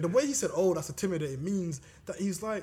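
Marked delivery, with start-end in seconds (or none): 0.5-1.4 low, sarcastic understatement. Discussing a snake encounter, the speaker imitates the man's reply, imitating a sarcastic remark. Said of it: "He's being sarcastic".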